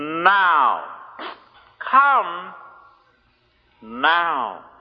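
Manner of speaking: "now" dropped low, set off by long pauses. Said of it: "I wish to emphasize that word".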